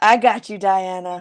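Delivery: low, very sultry, seductive voice. Answering a listener, speaker says the line in a very sultry voice. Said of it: "I just said that in a very sultry voice".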